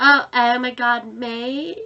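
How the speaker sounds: slow, drawled, put-on American accent. Comparing how different accents say mate, now an American accent. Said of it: "American doing it's just like".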